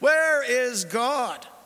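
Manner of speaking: loud, stern, booming, insistent voice. The rabbi repeats his question to a silent boy, louder. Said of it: "repeated the question more loudly".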